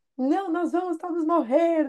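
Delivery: high-pitched mock yell. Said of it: "E ela fala gritando".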